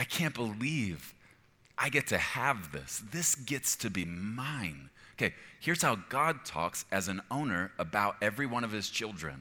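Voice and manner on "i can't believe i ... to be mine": thankful, appreciative voice, "mine" drawn out. Showing how someone talks about a prized possession, in a grateful tone. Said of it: "And so you talk like this".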